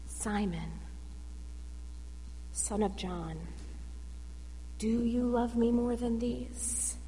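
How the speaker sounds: very soft, low, hushed undertone. Retelling a scene, the speaker voices a question to a disciple: low hushed voice. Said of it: "in a low, hushed voice".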